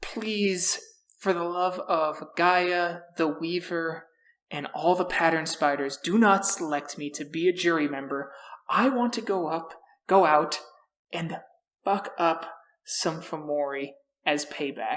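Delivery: secret, close, half-whispered begging. Playing a character who leans in close to another: half-whispering. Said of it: "and whispers in your ear".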